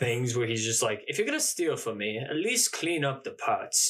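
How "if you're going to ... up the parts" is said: bad put-on proper British voice, higher pitch. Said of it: "My Ewan McGregor is so bad".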